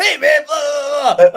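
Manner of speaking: put-on fast, amped-up talker. Retelling a phone call with an amped-up caller: imitating Bill Webb talking really fast. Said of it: "the guy was talking, like, really fast on the phone".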